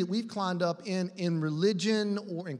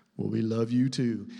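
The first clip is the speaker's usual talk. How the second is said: very deep, low mic voice; 8 semitones lower than usual. Retelling how Randy answered on the mic after being hollered at, in a deep, low Randy voice. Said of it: "in that deep, low, Randy voice says".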